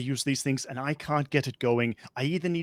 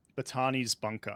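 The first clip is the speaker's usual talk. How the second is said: ordinary delivery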